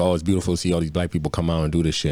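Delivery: normal talking voice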